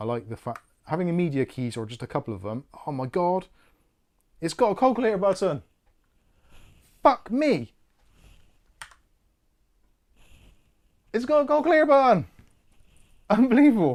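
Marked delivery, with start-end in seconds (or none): 2.9-14.0 thrilled and excited, higher and louder. Discovering a calculator button while trying out the keys: excited. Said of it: "Sorry, I'm a bit excited".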